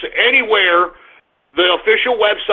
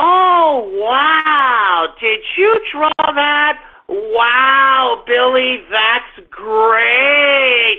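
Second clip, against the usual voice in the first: very slow, high, patronizing and condescending tone; 5 semitones higher than usual. Mimicking how everyone talks to Asperger kids, the speaker uses a mock-condescending tone. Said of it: "Everybody talks to you like a condescending jerk-off".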